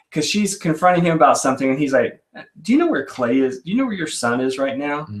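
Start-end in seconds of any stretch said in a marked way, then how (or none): 2.6-5.0 cool, calm, needling, pointed, passive-aggressive tone. Retelling a scene where Mister Porter confronts Clay's mom: Mr. Porter, mock calm passive-aggression. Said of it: "in a calm yet passive aggressive".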